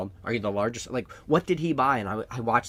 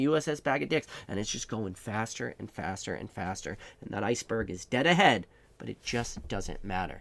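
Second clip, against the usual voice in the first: ordinary delivery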